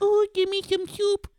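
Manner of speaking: very high, tiny little creature voice. Imagining a little Baby Yoda ghost, the speaker does a Baby Yoda voice. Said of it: "Is that what he sounds like?".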